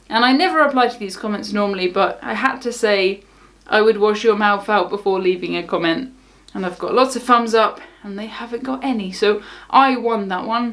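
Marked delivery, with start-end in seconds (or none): none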